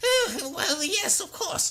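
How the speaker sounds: tiny high-pitched creature voice. Explaining the story's character voices, showing how kobolds sound, kobold voice. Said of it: "kobolds sound like".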